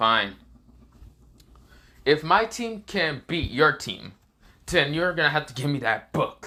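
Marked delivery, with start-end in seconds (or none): none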